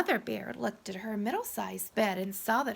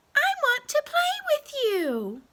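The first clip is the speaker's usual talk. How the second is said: tiny, small, very high-pitched cry; 5 dB louder than usual. Reading a story aloud, Baby Bear calling after Goldilocks: Baby Bear's very little voice. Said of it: "cried Baby Bear in his very little voice".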